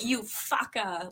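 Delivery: put-on Hawaiian pidgin accent. Imitating a neighbor's way of talking, in a hawaiian pidgin voice. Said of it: "less Italian, more, uh, pigeon".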